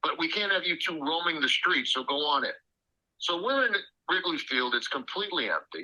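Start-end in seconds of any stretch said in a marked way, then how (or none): none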